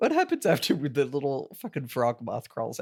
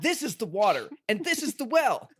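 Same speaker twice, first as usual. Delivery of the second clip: hyped-up put-on video host voice, pitched higher; 8 semitones higher than usual. Joking about a scene as a YouTube video: MrBeast voice. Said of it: "Mister Beast voice".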